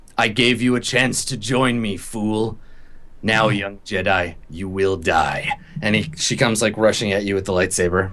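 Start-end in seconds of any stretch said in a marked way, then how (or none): 0.2-5.5 eerie, otherworldly possessed voice. Voicing a character in a voice not her own, threatening a young Jedi. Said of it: "in a voice not her own".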